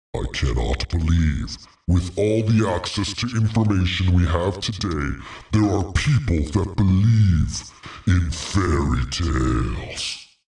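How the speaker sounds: imitated mocking voice. Reading a social media reply from a user named Friend of Satan, mocking put-on voice. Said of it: "let me use the, the voice here".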